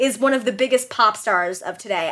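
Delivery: ordinary talk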